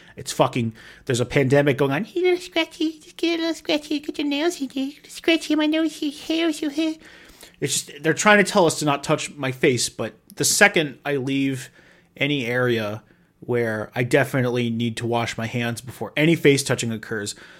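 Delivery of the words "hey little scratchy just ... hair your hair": very high-pitched, squeaky little voice. Voicing the itch that keeps yelling at you to scratch, in a high-pitched squeaky voice. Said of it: "in like a high-pitched squeaky voice".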